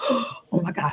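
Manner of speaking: put-on shaky, trembling little-kid voice. Retelling how another speaker sounded on the phone: imitating a childlike trembling voice. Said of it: "it was almost like a child, like".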